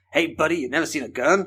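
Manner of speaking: English speaker doing a put-on American accent. An english speaker quoting americans talking to him, in an american accent. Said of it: "that's my American accent".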